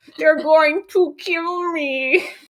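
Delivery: high, dopey creature voice. Imitating the toad from the cartoon episode: stupid Kermit the Frog toad voice. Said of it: "The Kermit the Frog toad".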